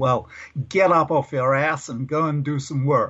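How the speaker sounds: clumsy, bad, fake American accent. Retelling what the xo said to the speaker, in a terrible american accent. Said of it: "I do a terrible American accent".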